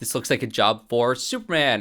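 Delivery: normal talking voice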